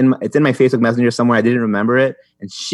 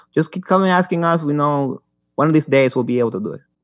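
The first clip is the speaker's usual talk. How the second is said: put-on Mexican accent, pitched higher; 4 semitones higher than usual. Quoting people who offered to do the job for $40, in a Mexican accent. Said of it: "There they came in Mexican accent right there".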